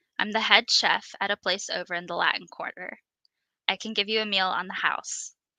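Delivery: ordinary delivery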